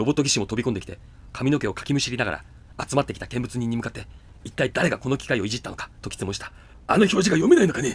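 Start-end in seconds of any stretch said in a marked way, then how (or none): 6.9-8.0 loud, high-pitched bellowing yell. A robot technician yells at the gathered onlookers, yelling. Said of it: "と彼はわめいた。".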